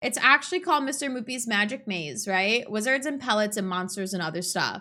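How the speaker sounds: ordinary talk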